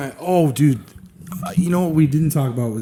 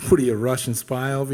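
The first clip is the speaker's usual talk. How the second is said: normal talking voice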